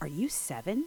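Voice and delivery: astonished, wondering, surprised tone. Opening her eyes to find a boy in front of her, she asks, surprised. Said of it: "She was so surprised that she asked".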